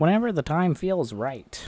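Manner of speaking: high-pitched, mocking, parroting tone. Speaker quotes what she says about timing, mocking imitation of her. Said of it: "I don't know why I did that in a mocking voice".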